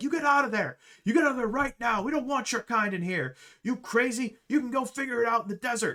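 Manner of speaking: shrill, very high-pitched angry shouting. Storyteller voicing a manager yelling at someone behind a door, angry yelling. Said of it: "He's yelling".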